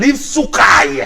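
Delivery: slow, forceful shout.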